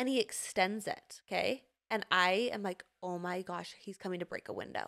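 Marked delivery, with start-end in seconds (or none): 3.0-4.9 mock-panicked, much quieter. Retelling the phone call to cj, the speaker acts out their own panic. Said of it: "I start panicking on the phone".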